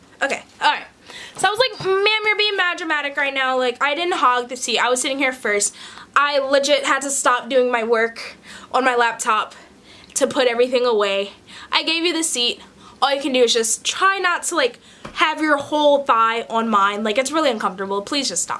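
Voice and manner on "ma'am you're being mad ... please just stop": ordinary talk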